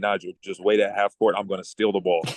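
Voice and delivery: ordinary talk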